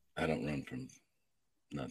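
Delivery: very low, quiet, sadistic movie-villain voice. During a question round, the speaker answers in a sadistic voice. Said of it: "You sound so sadistic. Hey, what voice?".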